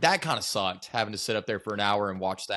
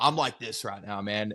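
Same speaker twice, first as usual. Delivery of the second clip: put-on boastful, swaggering old gym-regular voice. Retelling what an old man at the gym would say: imitating a seventy-year-old gym regular. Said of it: "He would literally be like".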